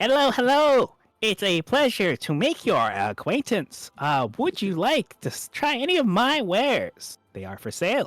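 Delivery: very high-pitched kobold creature voice. A game master voices a kobold merchant greeting the party, in Goldbolt's kobold merchant voice. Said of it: "and he'll say".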